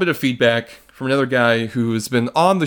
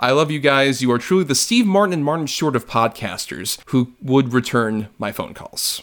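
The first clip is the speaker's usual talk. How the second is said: usual speaking voice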